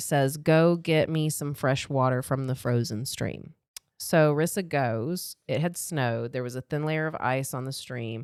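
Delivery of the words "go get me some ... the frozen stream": usual speaking voice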